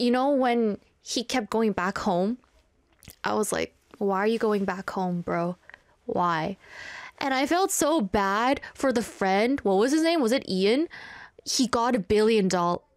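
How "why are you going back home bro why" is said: plain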